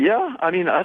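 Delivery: cracking voice. A caller, asked if he is a nervous dude, voice cracking. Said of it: "His voice cracked".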